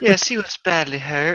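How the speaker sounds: put-on soft Southern accent. Reading Penelope's lines aloud as asked: soft Southern accent. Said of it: "soft Georgia accent or Southern accent".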